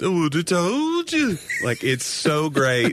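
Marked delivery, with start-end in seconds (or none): 0.0-1.4 put-on higher-pitched, musical, leaned-into Liverpool accent. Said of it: "the [name] and [name] accent".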